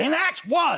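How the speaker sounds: loud belting singer-style voice.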